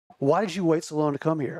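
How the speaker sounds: put-on angry voice. Retelling the specialist's question about waiting so long: imitating a pissed-off specialist. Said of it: "he's so pissed off".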